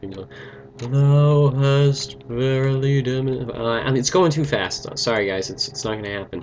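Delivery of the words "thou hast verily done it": very slow, ponderous, drawn-out tree voice. Playing a game, voicing a rescued tree's lines in a talking tree voice. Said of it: "I'll see if I can do my tree voice again".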